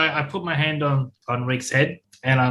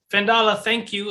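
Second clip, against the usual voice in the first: high, raised shout at full voice; 7 semitones higher than usual. Following a guide to safety while shouting thanks to Fendala: shouting thanks. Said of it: "but I'm gonna shout".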